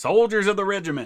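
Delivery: badly done, shrill, high, loud officer voice. Reading an old regimental letter aloud, imitating Colonel Sink. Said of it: "Luz kind of imitating him".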